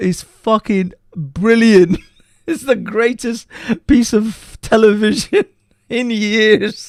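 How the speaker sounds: high voice, laughing through the words. Reacting to a funny clip for the chat: laughing while talking. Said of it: "I didn't wanna laugh over this, but I can't".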